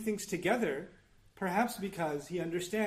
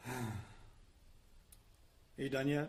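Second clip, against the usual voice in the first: soft, bored, disdainful sigh on a deep breath; 5 semitones lower, 8 dB quieter than usual. Demonstrating how to answer someone's lecture without words; deep breath of disdain. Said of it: "take a deep breath of, of uh, you know, disdain".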